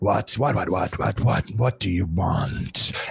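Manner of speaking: deep, rasping chorus of many voices in unison. Game master voicing the ferryman as you first approach him: Charon speaking in thirteen voices. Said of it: "speaking in thirteen voices all at once".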